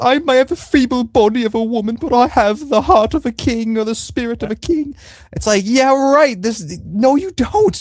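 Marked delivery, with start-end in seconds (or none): 0.0-4.9 very high, sobbing, weepy, pleading crying voice. Quoting a line from last episode: mock crying as Rhaenyra. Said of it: "she has that line where she's crying".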